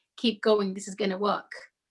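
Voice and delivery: ordinary talk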